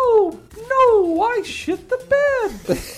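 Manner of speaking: squeaky voice, very high and loud. Doing a requested bit in the voice: Mickey Mouse voice. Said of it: "in the Mickey Mouse voice".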